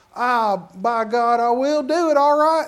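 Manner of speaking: put-on, laid-on rural country-boy accent. Retelling a churchgoer who is asked to come up and pray: country boy voice. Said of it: "country boy".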